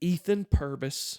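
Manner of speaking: put-on held-back laughter. Retelling how a mom scolded while fighting back laughs: imitating mom holding back laughter. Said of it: "trying her best to be serious".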